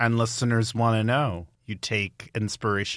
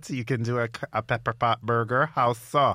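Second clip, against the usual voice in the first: put-on Guyanese accent. Imitating a Guyanese listener doubting the dish: put-on Guyanese accent. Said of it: "That's a great accent".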